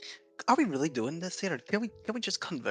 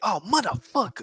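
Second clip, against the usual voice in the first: put-on urban street-style voice; 9 semitones higher, 8 dB louder than usual.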